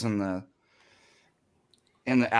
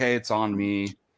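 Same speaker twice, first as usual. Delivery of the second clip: usual speaking voice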